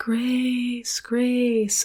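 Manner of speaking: spooky, drawn-out ghostly calling voice. Retelling a story where a ghostly voice calls a woman's name at night: ghostly voice. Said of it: "there's a ghostly voice calling her name".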